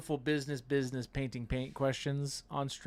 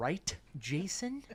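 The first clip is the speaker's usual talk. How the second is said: mock threatening, playfully menacing tone; 2 semitones higher, 3 dB quieter than usual. Asking another speaker to agree, mock threatening tone. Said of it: "like I'm gonna get beaten".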